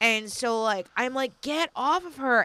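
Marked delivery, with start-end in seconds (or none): 1.4-2.5 reenacted scream, much higher pitch. Retelling pulling a sleeping man off the woman he was choking: retelling a scream. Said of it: "I'm screaming".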